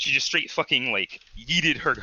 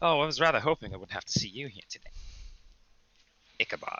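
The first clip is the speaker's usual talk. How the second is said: smug, self-satisfied, gloating, smirking tone; 5 dB quieter than usual. Game narrator voices Tiziana speaking to Ichabod, smug and smirking. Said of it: "just smirk on her on her face".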